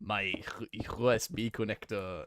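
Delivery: clumsy, bad French accent slipping into German. Trying a French accent that keeps turning German: bad French accent. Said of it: "I get too German when I try to do any other European accent".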